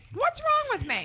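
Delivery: very high voice, speaking through a mouthful of food. Asked if she would pass a background check, she answers with her mouth full. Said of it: "She says with a mouthful of food".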